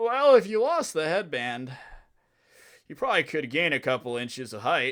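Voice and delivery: put-on words smeared together, drunk. Retelling what a woman told the speaker, imitating drunk slurring. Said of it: "she's like slurring her words".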